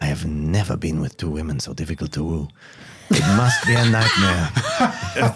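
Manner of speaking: sly stage half-whisper, fully voiced. Voicing a character who smiles and leans toward Arvin: half-whispering. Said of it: "he smiles and whispers at Arvin".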